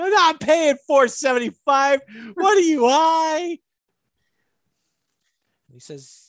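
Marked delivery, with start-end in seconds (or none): 0.0-3.6 mock, very high, shrill holler. Retelling driving around looking for gas, acting out yelling at a guy at a gas station. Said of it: "I'm yelling at gas stations".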